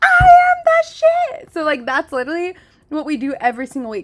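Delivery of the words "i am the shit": shrill, very loud, very slow, confident all-out scream. Retelling a son saying it again after being told to mean it: imitating a confident yell. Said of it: "say it like you mean it".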